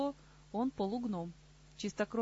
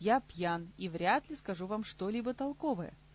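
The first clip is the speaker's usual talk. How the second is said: plain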